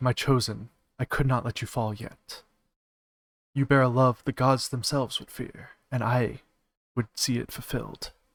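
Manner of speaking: sweet, honeyed, hushed, soft half-whisper. A game master voices her as she heals the player's wounds, half-whispering. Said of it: "she just kind of whispers".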